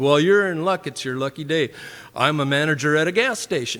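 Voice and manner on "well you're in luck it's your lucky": usual speaking voice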